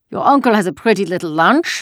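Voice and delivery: scornful, sneering tone. A soldier searching a lunch basket speaks to Anne-Marie, scornful. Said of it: "the soldier said scornfully".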